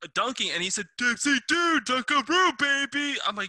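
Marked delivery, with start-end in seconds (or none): 1.0-3.2 excited announcer voice, higher and louder. Retelling a line heard in a basketball video game: Dick Vitale voice. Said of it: "the first time I heard Dickie V's voice".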